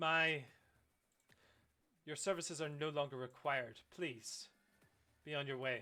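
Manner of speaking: slightly scoffing. Voicing a character who scoffs at a stranger's offer: slightly scoffing. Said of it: "kinda scoffs at your words slightly".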